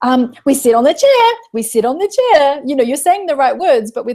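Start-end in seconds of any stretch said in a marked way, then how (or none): 0.0-2.6 whiny, sing-song, pleading tone. Demonstrating the wrong tone to use with a child: whining at the child. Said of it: "whine at the child and say".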